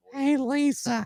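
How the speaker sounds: very high-pitched cartoon mom voice. Retelling what a woman said in her sleep, in a Marge Simpson voice. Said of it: "or whatever it sounds".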